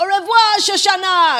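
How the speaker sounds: very loud, high-pitched yell. Retelling a film scene where a Nazi officer yells after a fleeing woman; retelling Christoph Waltz's yell. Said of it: "so he just yells".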